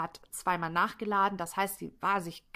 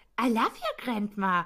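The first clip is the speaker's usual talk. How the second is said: mocking, aping tone full of scorn; 3 semitones higher, 4 dB louder than usual. Retelling how a woman mocked a man's last words, mocking imitation of him. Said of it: "Und sie äfft ihn so richtig nach".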